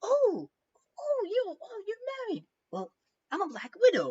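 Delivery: very high-pitched spider creature voice.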